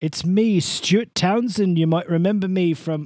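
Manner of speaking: loud fake Irish accent drifting into British. Speaker plays the Irish actor introducing himself: Stuart Townsend, Irish accent slipping British. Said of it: "I just turned British".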